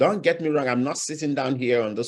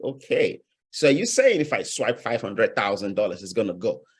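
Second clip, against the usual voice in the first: ordinary talk, nothing marked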